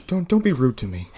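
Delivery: gentle, kindly voice with no edge. Told to shut up, answering back in a gentle Santa Claus voice. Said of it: "He talks like a gentle Santa Claus".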